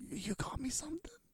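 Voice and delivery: hushed, soft, earnest, sincere whisper. Describing a scene where Dennis receives a gift, imitating Dennis's sincere whisper. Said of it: "the way Dennis whispers".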